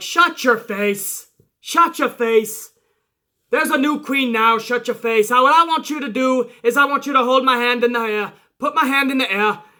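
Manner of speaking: put-on poorly done Irish accent. Retelling a wrestling promo, imitating Becky Lynch: bad Becky Lynch accent. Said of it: "I'm not gonna do the accent anymore because I'm pretty sure it's fucking horrible".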